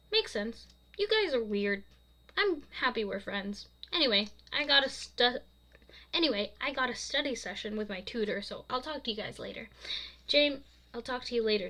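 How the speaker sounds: usual speaking voice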